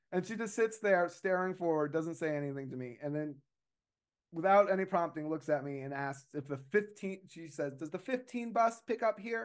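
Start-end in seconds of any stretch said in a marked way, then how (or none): 7.7-9.4 really high-pitched, machine-like robotic voice. Retelling a strange woman asking about the 15 bus, really high robotic voice. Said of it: "in this really high robotic voice".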